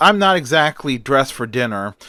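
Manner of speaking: ordinary delivery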